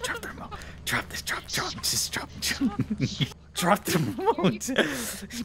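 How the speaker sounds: hushed whispering. Telling someone to drop the remote so others can't hear, whispering. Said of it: "I'm whispering".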